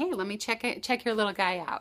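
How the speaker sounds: ordinary talk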